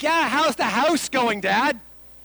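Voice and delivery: put-on accidental Canadian accent slipping in. Retelling talking with family, addressing Dad: Canadian accent. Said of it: "What just came out of my mouth?".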